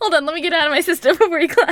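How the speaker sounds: laughing hard while talking. Apologizing for a burst of laughter before a clap: laughing hard while talking. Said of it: "I'm laughing so hard".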